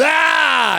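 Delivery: put-on high, loud drunken yell.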